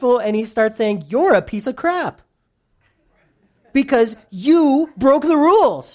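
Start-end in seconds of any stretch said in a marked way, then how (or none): 1.1-5.9 raised, nasty, contemptuous, scornful mean voice. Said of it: "The enemy is so mean".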